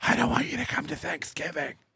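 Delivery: soft, hushed whisper under the breath. Acting out a girlfriend starting a fight at a party: imitating speaking softly under breath. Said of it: "tell you under her breath softly".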